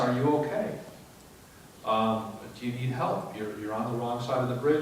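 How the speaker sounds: ordinary delivery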